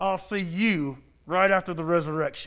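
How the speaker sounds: put-on clenched-teeth speech. Telling a story, the actor playing Jesus answers a heckler, through gritted teeth. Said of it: "through his gritted teeth".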